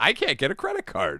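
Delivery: put-on old-fashioned nineteen fifties housewife manner. Mocking a woman who says her husband does the finances, imitating a 1950s housewife. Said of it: "she sounds like a fucking nineteen fifties housewife".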